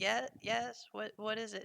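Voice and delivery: barely audible, very faint, soft, high-pitched voice. A game master voices someone replying from behind a door: very faint, soft voice. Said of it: "a very faint voice replying like".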